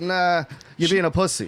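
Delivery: normal talking voice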